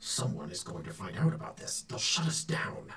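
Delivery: muted, hushed, secretive low undertone. Recounting what a second, different voice says, in a hushed voice. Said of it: "in a kind of like a hushed voice".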